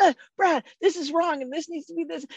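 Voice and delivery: put-on eager, proud tone. Retelling running to an office after finding a mistake: imitating own excited past words. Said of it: "I was so excited".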